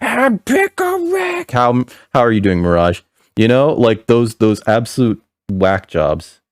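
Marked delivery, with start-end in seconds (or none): 0.0-1.5 mock drunken scream, very high, very slow, drawn out. Mocking a fan who gets drunk at a bar: imitating a drunk person screaming. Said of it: "gets drunk at a bar and starts screaming".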